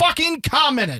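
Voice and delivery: hollering. Upset that viewers don't comment on episodes, hollering. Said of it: "Why are you hollering?".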